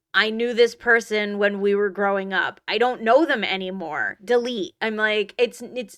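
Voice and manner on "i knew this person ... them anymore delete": ordinary talk, nothing marked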